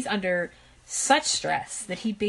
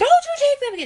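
put-on shrill scream, much higher and louder; 10 dB louder than usual. Describing a clip of Bonnie Simon gripping her son, imitating Bonnie Simon's shrill scream. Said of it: "She was shrill".

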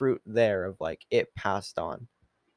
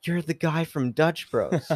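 put-on man's yelling voice, high and thrilled; 5 semitones higher than usual. Retelling a man in a truck who recognized them and yelled at the car: imitating a man yelling. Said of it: "he just yells at the car".

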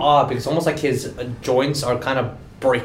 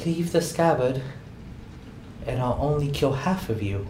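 put-on small, soft, childlike little boy's voice; 6 dB quieter than usual. Game master voicing a lizard-like creature speaking to the party, in a little boy's voice. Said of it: "a little boy's voice".

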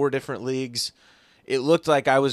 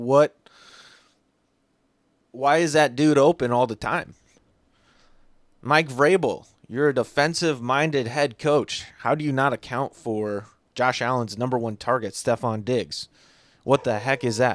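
plain

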